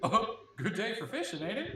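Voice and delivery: hammed-up, cartoon-like delivery. The game master voices a passing character greeting the players, in a Goofy voice. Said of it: "It's Goofy".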